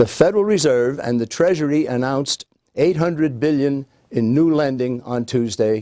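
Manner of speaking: ordinary talk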